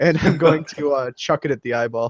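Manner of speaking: ordinary delivery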